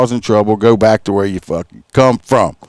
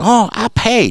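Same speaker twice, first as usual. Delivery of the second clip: put-on Chinese accent, fake; 12 semitones higher than usual. Retelling what some people said to the speaker, fake Chinese-sounding accent. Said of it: "all my foreign accent people sound Chinese".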